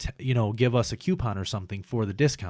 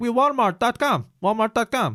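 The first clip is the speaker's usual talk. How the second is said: put-on Indian accent, very high and loud; 12 semitones higher, 5 dB louder than usual. Retelling what a customer service rep said: imitating an Indian accent.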